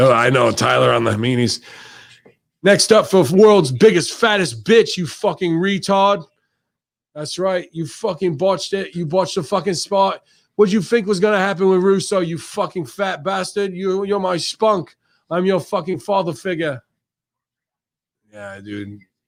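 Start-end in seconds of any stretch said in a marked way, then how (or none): 2.6-16.8 very high-pitched, cartoonish English accent. Quoting someone ranting at another person: English accent. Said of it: "Do the English accents".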